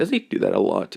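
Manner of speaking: ordinary delivery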